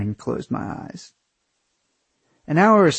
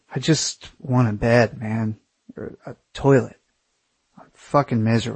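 ordinary delivery

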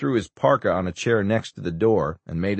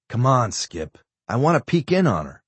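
plain

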